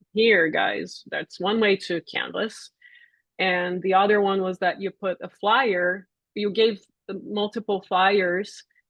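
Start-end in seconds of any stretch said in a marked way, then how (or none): none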